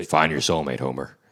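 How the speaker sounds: rough, aged-sounding fake voice. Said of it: "I was trying to sound like [name]".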